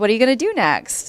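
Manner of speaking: fast, mock really happy, excited voice. Retelling a departure meeting where the asker spoke in an imitated really happy, excited way. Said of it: "in a really happy, excited way".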